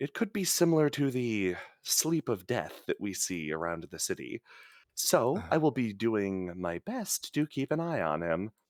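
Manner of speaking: secretive, hushed half-whisper, leaning close. Voicing a doctor who leans in to tell visitors: half-whispering. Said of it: "leans in and whispers to you".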